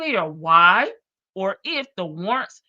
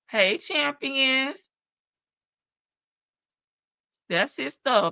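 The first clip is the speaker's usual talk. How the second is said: mocking, higher pitch; 4 semitones higher than usual. Commenting on the people in a case, sarcastic. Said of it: "I'm being sarcastic".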